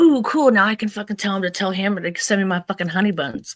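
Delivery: eager, thrilled tone. Retelling a call from him, imitating own excited reaction. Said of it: "the thing that I was excited about was like".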